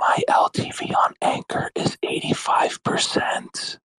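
whispered voice. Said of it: "You have to be like this".

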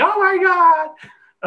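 very high, loud, slow scream. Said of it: "My mom is screaming".

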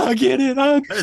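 mock full-on ugly crying, high-pitched sobbing. Retelling finally understanding the show by the end: imitating ugly crying. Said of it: "ugly crying, going".

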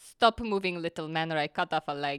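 low, menacing, threatening voice. Narrating a game, a character threatens a small figure, menacing Agata voice. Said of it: "looks at this figure menacingly and says".

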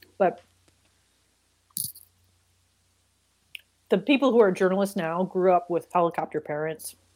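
talking with mouth full of food. Speaker in a group conversation about young journalists, talking with mouth full. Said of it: "talking my mouth full".

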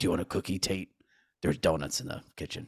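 put-on gravelly hero voice. Imitating an actor who talks like Batman: imitating a Batman-like voice. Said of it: "he talks like Batman sometimes".

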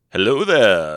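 loud, wise mentor voice. Opening a podcast episode, the host greets listeners talking like Obi-Wan. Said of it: "I don't know why I'm talking like Obi-Wan".

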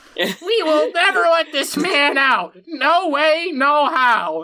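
high-pitched fantasy gnome character voice. Trying the line again after a failed first attempt, in a gnome voice. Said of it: "That's a terrible gnome voice. Let me try again".

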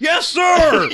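goofy, dumb overdubbed-sounding yell, very high pitch. Imitating the henchman's dubbed line from off screen: imitating a dumb dubbed voice. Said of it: "the dumbest dubbed in voice".

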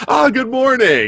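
high, loud, mock cheery tone.

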